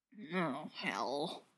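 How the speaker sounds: very low, very quiet mumble. Narrator reads a bruised man's words on waking, mumbled. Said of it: "he mumbles".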